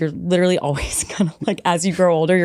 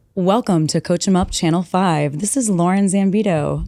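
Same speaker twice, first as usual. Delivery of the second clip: broadcast news anchor delivery. Asked for a quick news introduction for the show, using a news anchor voice. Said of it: "give us just a real quick news introduction?".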